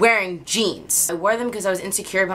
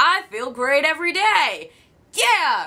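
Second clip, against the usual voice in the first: high, fake-cheery, boastful delivery. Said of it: "I'm not gonna sit here and say".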